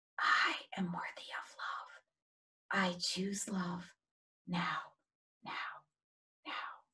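soft, barely audible whisper. Leading listeners through a repeated pledge, now in a whisper.

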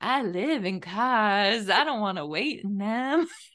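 slow, mellow, chill, laid-back put-on voice.

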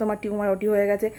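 usual speaking voice

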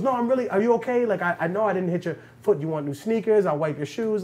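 put-on playful, laughing, joking banter. Retelling a billionaire apologizing after bumping a man's foot with a bike: imitating someone laughing and joking. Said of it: "just laughing and joking".

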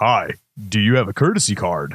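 on-air radio broadcaster announcer delivery. Retelling how a high school kid at work greeted him, radio announcer voice. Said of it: "Just like that. ... It sounded like he was on the radio".

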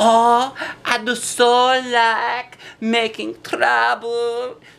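very high, gleeful, giggly voice. Narrator reads a girl hiding behind a tree, talking to herself: giggling. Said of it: "she giggled to herself".

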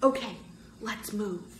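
soft whisper, barely voiced. Sherry, supporting Michael from one side with Bird, urges them on: whispering. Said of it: "Sherry whispered".

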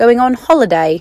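terrible put-on European accent. Imitating how friends in Europe say it: terrible put-on European accent. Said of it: "sorry for the terrible accent there".

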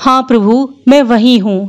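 ordinary delivery, nothing marked

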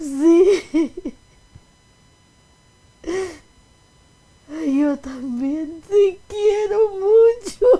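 very loud, high, joyful tearful sobbing. A daughter answering her mother's message, crying with joy. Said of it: "Estás llorando de alegría".

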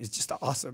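breathy, choked-up whisper thick with emotion. Recalling a packed worship night in a church, choked up with emotion. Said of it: "I'm all choked up right now".

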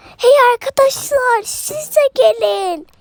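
high, shouted call, as if from distance. An escaping child calls to the friends to follow, shouting to friends. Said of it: "Bağırıyorum buradan".

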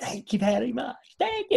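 put-on high-pitched Eastern European accent with Polish flavour. Imitating a performer thanking the audience: high-pitched Polish accent. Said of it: "Eastern European, Polish accent".

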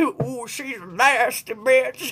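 slow, drawn-out, put-on old granny voice. Relaying a remark from spirit to listeners, in an old granny voice. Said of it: "Why is it gotta be in the granny voice?".

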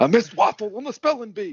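put-on very high and loud, kid-like. Joking about a younger Bernie Sanders in sixth grade: sixth-grade Bernie Sanders impression. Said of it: "It's a younger Bernie Sanders".

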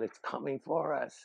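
put-on yelling, called out high. Retelling how somebody yelled as mortar rounds dropped: imitating someone yelling. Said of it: "somebody yelled".

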